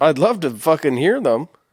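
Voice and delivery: words mushed and muffled by a full mouth. Answering another speaker's offer to share suggestions, talking with mouth full. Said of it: "'Cause my mouth is so full".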